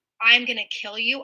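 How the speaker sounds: ordinary talk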